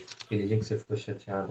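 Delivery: very low, very quiet hushed whisper. Sharing a story about a colleague with his permission, whispering. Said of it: "Deixa eu cochichear aqui".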